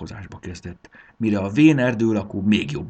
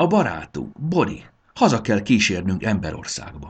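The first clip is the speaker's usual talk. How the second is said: ordinary delivery, nothing marked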